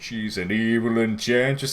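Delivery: strange, weird, deep, slow drawling voice. Acting out an imagined scene where a character speaks: imitating a weird deep voice. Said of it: "this really weird, deep voice".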